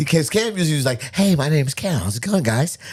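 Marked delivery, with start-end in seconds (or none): 1.1-2.8 plain, casual, normal tone. Imitating how another speaker usually talks: Peter Parker sounding voice. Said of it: "he's got a Peter Parker sounding kinda guy".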